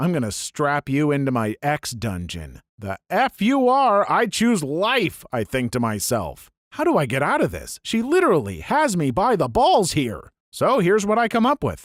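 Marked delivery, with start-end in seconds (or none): 0.0-2.6 low, sinister, looming, menacing tone. Retelling what a woman said to him, mock-menacing. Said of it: "says menacingly".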